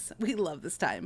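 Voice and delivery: sarcastic. Speaker talking to friends about the fall season, sarcastic. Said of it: "That's sarcasm".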